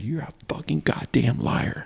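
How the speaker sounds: enraged, furious outburst in a breathy whisper. Retelling an outburst in court: imitating own angry outburst. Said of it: "I was so mad".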